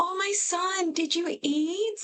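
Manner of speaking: put-on slow, high-pitched baby talk. Mocking how Mimi talks to her grown son, imitating high-pitched baby talk. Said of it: "the high pitched tone, and the baby talk almost".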